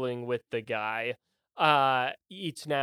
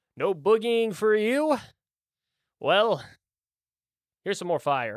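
put-on high old wizard character voice; 6 semitones higher than usual. Voicing an old wizard attacking with fire: old wizard voice. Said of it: "the old man's turn as he goes".

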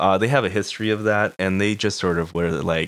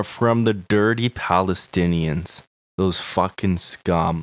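usual speaking voice

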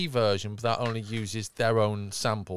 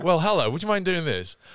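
high, very posh public-school accent; 7 semitones higher, 5 dB louder than usual. Imitating how the AI copy of the speaker's voice sounded: very public school voice. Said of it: "very, very public school".

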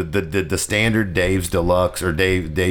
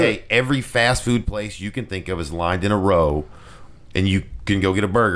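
ordinary talk, nothing marked

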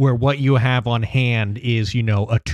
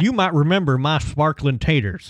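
over-the-top, exaggerated hillbilly accent; 4 semitones higher than usual. Reading cookbook recipe copy aloud in an exaggerated hillbilly accent. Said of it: "I need to read the copy of this article in my hillbilly voice".

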